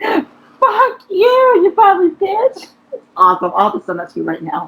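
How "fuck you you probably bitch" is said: very high, slow, sobbing, wailing cry-scream. Describing a video, acting out the little girl in it: imitating a screaming crying girl. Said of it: "she's crying, and like she screams".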